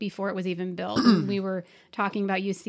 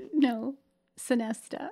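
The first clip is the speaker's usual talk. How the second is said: words tumbling out between laughs; 4 semitones higher than usual. Correcting another speaker's pronunciation of a hotel name, laughing while talking. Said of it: "Why are you laughing?".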